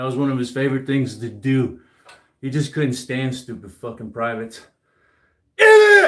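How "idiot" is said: very loud, high, shrill drill-sergeant scream. Describing a drill sergeant who couldn't stand stupid privates, retelling his scream. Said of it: "He would just scream".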